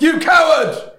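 enraged elf voice outburst, very high, furious shout. Playing an elf storming out on the orcs: angry elf outburst. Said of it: "I'm really angry".

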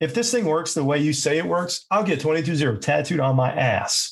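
heavy, dripping, real sarcasm. Retelling what a skeptic said about the process, mock-sarcastic. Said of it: "Just real, real sarcastic".

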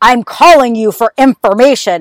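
dark, cold, shadowy put-on voice. Describing how a man spoke to her, imitate his really deep, dark voice. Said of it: "he used like really deep, like dark voice".

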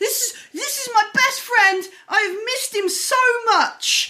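loud, high-pitched shout. A storyteller voices a man pointing out his returned best friend, shouting. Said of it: "he shouts out".

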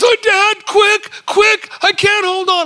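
mock, very high, loud, crying, frightened child voice. Retelling a son hanging from a tree branch: imitating a crying scared child. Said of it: "he's crying 'cause he's afraid".

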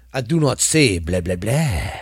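put-on vampire count voice. A show host tries out a Dracula voice for listeners. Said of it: "I'm trying to do my Dracula voice".

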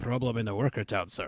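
hushed, muddy, put-on Slavic accent. Describing a scene, the speaker voices the overseer in a Slavic accent. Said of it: "the overseer with a slavic accent".

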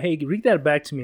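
ordinary delivery

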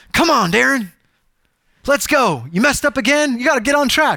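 impatient, pushy, hurrying, nagging tone. Asking listeners to imagine god being impatient with them; impatient. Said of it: "Imagine if God was impatient with you".

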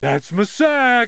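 high-pitched yell. Playing a wrestler sitting on an opponent's chest, yelling. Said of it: "sit on her chest and just yell".

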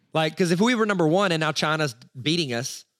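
ordinary talk

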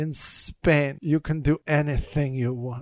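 bad, weak, drawn-out put-on Spanish accent. Retelling a woman's line to a man in a story, bad spanish accent. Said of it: "I can't do a Spanish accent very well".

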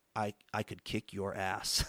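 quiet under-breath mutter. Retelling how a man looked at him, the speaker quotes what he said under his breath. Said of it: "says under his breath".

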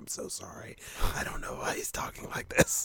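embarrassed, hushed whisper. Acting out a friend apologizing to the hostess outside a restaurant: imitating an apologizing friend. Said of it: "apologizing, like".

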